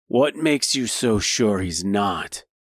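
snide, snarky tone. Narrator voices a skeptic answering the crowd's questions; snide. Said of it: "Replied Simon snidely".

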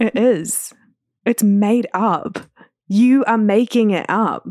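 fired-up, emphatic, heated yelling. A speaker answers another person's point, yelling into the mic. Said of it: "I'm like yelling into the mic".

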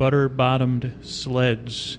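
very slow, deliberate, each word drawn out. Repeating a phrase for the listeners after joking about saying it fast: said slowly. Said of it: "I'll say it once slow".

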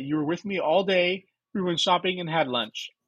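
ordinary talk

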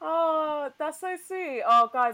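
very loud, teary, drawn-out, near-tears emotion. Podcast host, thanked by the guest, responds: getting teary. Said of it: "I'm getting teary now".

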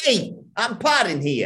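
put-on New York accent. Signing off the podcast, deciding to go for it: put-on New York accent. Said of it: "New York accent, mildly appropriate, but optional. Optional. So I'm going to go for it".

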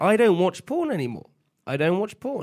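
pitch rises up on the final word porn. Denying something to the other speakers, voice going up at the end. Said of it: "Your voice goes up at the end".

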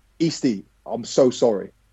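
put-on nervous, apologetic voice. Telling a story, the speaker retells someone apologizing after accidentally hitting a man: imitating a scared apology. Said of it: "Callum was so scared and nervous".

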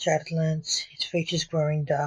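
ordinary delivery, nothing marked

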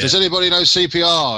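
mock shouting. Joking about how a man recruits medical staff, retelling his shout at a job centre. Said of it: "just shouts".

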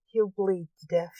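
ordinary delivery, nothing marked

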